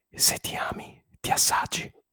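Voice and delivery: shouted in an asmr-style whisper. Answering a request to shout a phrase in ASMR: shouted in ASMR. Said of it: "Urlata in S M R".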